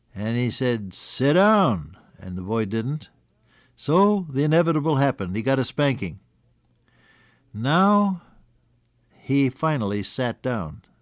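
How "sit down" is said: mock stern, raised, gravelly voice. Retelling a father ordering his son a third time to sit down, raised gravelly voice. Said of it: "the voice was raised with a little gravel in it".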